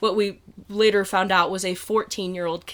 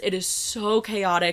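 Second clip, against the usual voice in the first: plain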